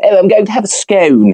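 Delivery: very high, la-di-da put-on posh accent. Joking that the word scone sounds posh: put-on posh accent. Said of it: "Scone is very posh".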